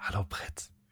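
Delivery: very soft, breathy ASMR whisper. Joking about making an ASMR podcast, the speaker gives a greeting: ASMR whisper. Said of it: "Vielleicht sollte ich so einen ASMR-Podcast machen. ... Das ist dann so".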